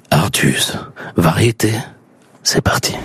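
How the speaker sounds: on-air radio announcer host voice. Asked to launch the show, opening it in a radio announcer voice. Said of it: "J'ai le droit de prendre une voix de radio?".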